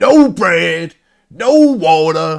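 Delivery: deliberate, loud, slow, bellowed put-on character voice. Doing a bit in the Booker T voice, which makes all words sound the same. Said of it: "when I do it in the Booker T voice".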